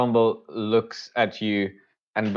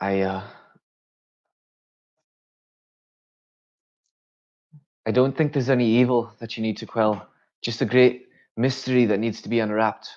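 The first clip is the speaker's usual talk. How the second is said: greedy, wanting, eager, hungry professor character voice. Voicing a professor eyeing notes with desire: eager, lip-licking professor voice. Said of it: "almost licking his lips".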